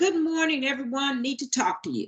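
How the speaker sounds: curt, matter-of-fact, blunt, direct tone. Showing how a greeting's tone comes across: blunt, direct tone. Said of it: "That's pretty direct tone".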